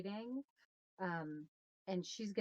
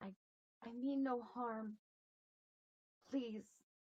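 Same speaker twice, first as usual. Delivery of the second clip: high, pleading, harmless-sounding tone; 5 semitones higher than usual. After scaring the birds away, speaking to them: quiet voice. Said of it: "I'll be quiet and say".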